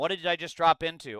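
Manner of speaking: plain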